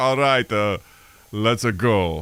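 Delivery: very slow, drawn-out action-star voice, like a movie muscleman. Mimicking how a celebrity says a casual phrase: Arnold Schwarzenegger impression. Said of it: "As if you like Arnold Schwarzenegger being like".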